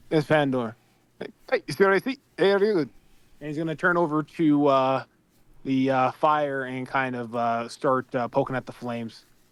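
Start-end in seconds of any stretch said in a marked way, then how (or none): 1.2-2.9 thick Scottish brogue, fast and high. Speaking in character to the druid: thick scottish accent. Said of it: "All I understand is Scottish nonsense".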